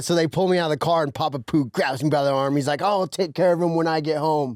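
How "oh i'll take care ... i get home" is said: acted, stern, put-on angry voice. Retelling how Papa Pooh pretended to be angry at the police stop: imitating Papa Pooh acting mad. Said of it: "he was all acting all mad".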